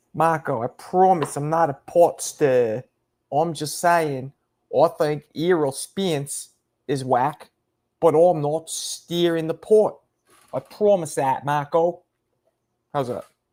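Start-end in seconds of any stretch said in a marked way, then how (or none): 0.1-12.0 slow, try-hard put-on Australian accent. Imitating another speaker's accent, asking if it sounds Australian: attempted Australian accent. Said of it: "do I sound Australian?".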